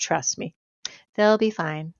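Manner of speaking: mock-calm, reassuring tone. Speaker retells what he said while they were in a panic, imitating his calm reassurance. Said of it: "In his typical calm way".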